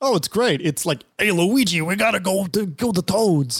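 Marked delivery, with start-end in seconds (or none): 1.2-3.6 put-on New York accent, plumber character voice. Answering how the imagined Mario performance would sound: Bob Hoskins as Mario. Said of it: "what's Bob Hoskins' Mario per-, performance like?".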